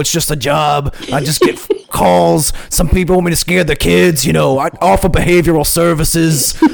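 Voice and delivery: casual, blue-collar East Coast working-class voice. Introducing Wrinkles the Clown as a personality, doing the Wrinkles the Clown voice. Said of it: "just kind of talks like this".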